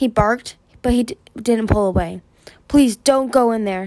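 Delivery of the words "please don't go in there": strained, effortful, barely managing to speak. Gripped by a vision, she begs him not to go in: barely managing to speak. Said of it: "she managed".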